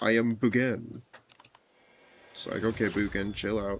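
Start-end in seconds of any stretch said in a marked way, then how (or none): 0.0-1.0 mock-dramatic voice, slower pace. Retelling how Bugen says his own name, in a put-on mystical Bugen voice. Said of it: "He like pronounces the boo part quicker. ... You're not that mystical or whimsical".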